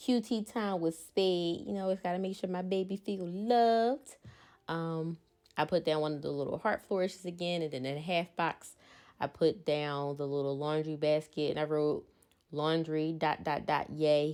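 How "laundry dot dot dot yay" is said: plain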